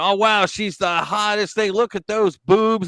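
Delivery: high-pitched, teasing, fake flattering tone. Retelling a comedian's stunt of mocking a politician: imitating Alex Stein's mock flattery. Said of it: "he was going".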